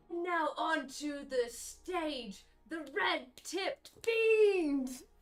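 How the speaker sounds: booming arena-style call. Voicing an arena announcer heard by players passing by: booming announcer voice. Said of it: "you hear a booming voice ring out".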